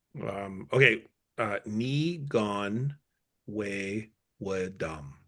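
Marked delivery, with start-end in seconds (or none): 1.7-5.1 slow careful pronunciation, quieter. Pronouncing one's own name for others to learn: pronouncing a name slowly. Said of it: "pronouncing your name slowly".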